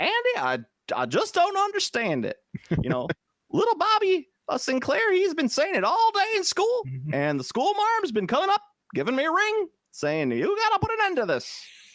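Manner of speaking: very high, sing-song, swooping, fussy voice. Imagining Barney's complaint about kids saying six seven, in a Barney impression from Mayberry. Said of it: "Barney's sitting there going in Mayberry going like".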